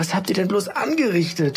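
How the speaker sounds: stuttering in disbelief. The mother confronts the children about what they have done, stammering, aghast. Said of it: "stammelte sie nun fassungslos".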